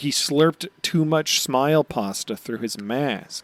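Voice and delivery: ordinary talk, nothing marked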